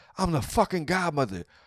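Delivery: high, full-throated, shouted yell. Telling how a woman gave herself her nickname, imitating her yelling after a shootout. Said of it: "then yelled like in the middle".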